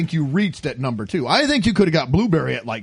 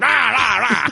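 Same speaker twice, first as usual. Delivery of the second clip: blustering, worked-up, agitated rant; 6 semitones higher, 3 dB louder than usual. Speaker teases Greg about how he acted tonight, mock-ranting like Greg. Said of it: "Tonight he's like".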